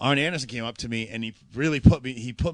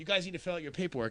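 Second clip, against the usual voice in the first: put-on flustered voice, higher and quieter; 5 semitones higher, 8 dB quieter than usual. Retelling what someone said after the match stopped: imitating someone flustered. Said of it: "he's all, like, flustered".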